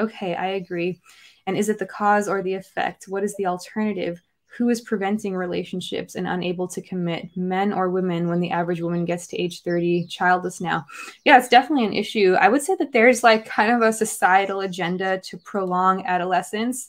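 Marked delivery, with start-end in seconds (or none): none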